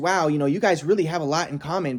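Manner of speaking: put-on sarcastic tone. Retelling what a friend said to the ex: imitating a sarcastic remark. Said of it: "she was being sarcastic".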